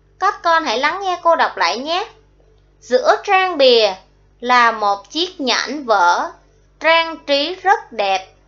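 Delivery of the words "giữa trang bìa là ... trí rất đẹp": slow, pauses after bìa and after vở. Teacher rereading a sentence for the class: pauses after bìa and vở. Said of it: "cô ngắt hơi sau tiếng bìa và tiếng vỡ".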